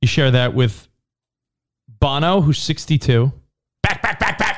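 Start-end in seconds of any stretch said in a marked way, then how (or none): 3.8-4.6 high sportscaster call of "back, back, back". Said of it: "Chris Berman".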